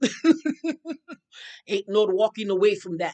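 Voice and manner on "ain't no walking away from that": louder mock Irish accent. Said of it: "see if I can say it in my, um, accent".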